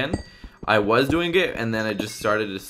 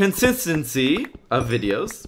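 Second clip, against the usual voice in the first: slower and higher pitched; 5 semitones higher than usual. Explaining his plans for his videos, saying the key word slowly. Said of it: "I have to say it slow for some reason".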